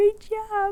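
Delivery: high, squeaky put-on voice.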